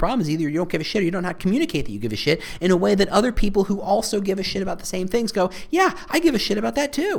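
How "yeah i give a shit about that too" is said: very high, squeaky, rising dolphin-like voice. Quoting how like-minded people respond, let your voice go high. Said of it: "I don't know why my voice got so high there".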